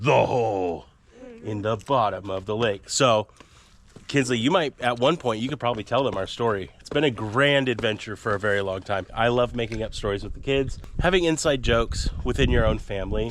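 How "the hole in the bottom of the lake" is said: low, booming, as deep as possible. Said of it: "in the deepest voice they know how".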